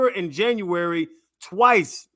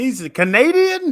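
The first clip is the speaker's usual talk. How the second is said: high, loud, odd-sounding Canadian accent. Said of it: "why do you say it like he's from Sierra Leone".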